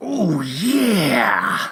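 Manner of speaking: very loud, high, belted, long drawn-out "yeah". Listing wrestlers one can imitate: Randy Savage impression. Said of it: "everyone can do the Randy Savage".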